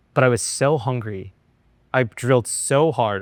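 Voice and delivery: choked-up, breaking voice, very slow. Recalling how hard they drilled as a hungry kid, getting emotional. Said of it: "we get emotional thinking about it".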